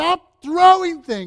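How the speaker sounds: very loud, high-pitched shout, angry and fearful. Recounting things hitting the window behind their head, retelling a yell. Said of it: "I'm yelling".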